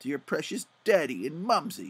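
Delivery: ordinary delivery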